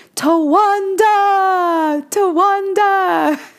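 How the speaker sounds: mock shouting. Telling how a woman rammed a convertible with her car, retelling a yell.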